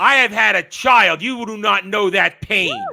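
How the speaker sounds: high, loud, proud, defiant warrior boast. Voicing Bronwyn with a sword at her neck: mock-defiant Bronwyn voice. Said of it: "So she looks defiantly".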